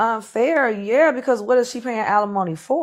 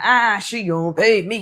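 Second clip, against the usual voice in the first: mock-angry, big, puffed-up voice; 3 dB louder than usual. Mimicking how the other speaker sounds right now, in a mocking big mad voice. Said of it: "You sound real big and mad".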